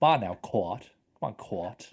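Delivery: put-on Louisiana accent. Discussing a film, the speaker quotes actor Lithgow's line: imitating Lithgow's Louisiana accent. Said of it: "I love his Louisiana accent as well".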